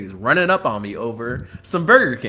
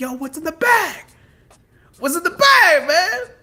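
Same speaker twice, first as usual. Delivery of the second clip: mock very high, drawn-out yell with rising pitch; 4 dB louder than usual. Retelling a stranger calling out from across the street: imitating a man yelling. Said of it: "yelling at me from across the street".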